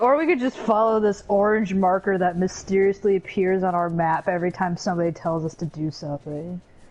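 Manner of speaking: ordinary talk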